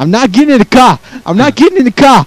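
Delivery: put-on South Jersey accent. Acting out an argument with someone, say it in a stupid South Jersey accent. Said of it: "This is a stupid South Jersey accent".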